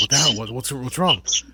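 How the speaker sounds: loud, rushed, play-acted bewildered panicky outburst. Retelling how a filmmaker woke up during a movie: imitating Kevin Smith freaking out. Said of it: "freaking out".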